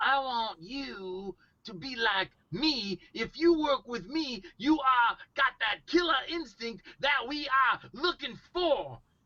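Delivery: wrestler talk, "you" drawn out. Showing the wrestler voice mimicked for a movie role: imitating a wrestler's voice. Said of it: "it was a guy that sounded like this".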